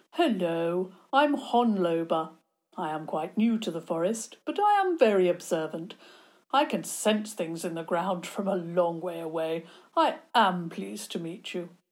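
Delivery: put-on refined, educated elderly gentleman voice. Reading a story aloud, voicing a monster greeting Theo: educated old man voice. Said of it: "He sounded like an educated old man".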